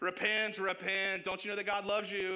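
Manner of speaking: furious, high, bullhorn-loud street-preacher scream. Speaker imitating a street-corner preacher with a bullhorn, mock-angry street preacher screaming. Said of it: "he's saying like an angry voice".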